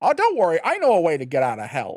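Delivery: loud, swooping, animated cartoon voice. Telling a story while doing a Donatello voice. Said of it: "I'll do my Donatello voice".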